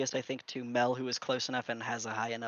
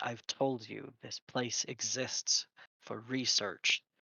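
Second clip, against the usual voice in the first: mumbled, murmured, barely voiced. Voicing an old man answering a demand: murmured reply. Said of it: "in the murmured reply".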